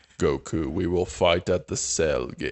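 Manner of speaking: big villain voice, anime style. Joining in the cartoon impressions with a line from the villain: Perfect Cell voice. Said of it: "then it becomes Perfect Cell".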